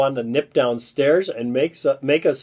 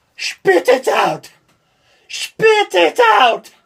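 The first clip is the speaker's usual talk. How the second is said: bad, very high, shrill, loud Irish accent; 6 dB louder than usual. Telling a joke, the Irishman picks the fly out of his drink, bad Irish accent. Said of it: "bad Irish accent".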